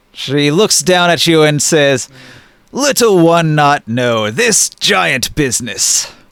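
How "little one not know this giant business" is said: big, thunderous, booming giant voice. The narrator voices the giant Olga turning down a player, Olga's booming giant voice. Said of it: "in her booming voice".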